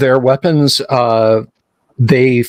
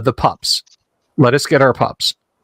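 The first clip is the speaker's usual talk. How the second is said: plain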